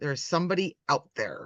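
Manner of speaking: very hushed, barely voiced near whisper. Acting in the scene, in a very hushed voice. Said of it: "not a whisper whisper, but a very hushed".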